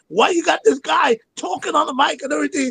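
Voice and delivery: high-pitched hollering. Retelling how the owner screamed at the speaker: imitating someone screaming. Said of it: "the owner screaming at me".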